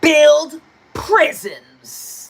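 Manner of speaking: mock menacing, intimidating tone, swooping pitch. Retelling what a guy said to shake someone up: imitating an intimidating tone. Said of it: "he said it like it was gonna shake me up".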